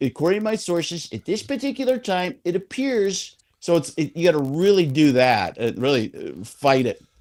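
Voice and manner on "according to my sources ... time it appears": pitched-up voice pushing every S sound hard. Showing how hard the Schefter S's are: Adam Schefter impression. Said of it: "my Schefter S's".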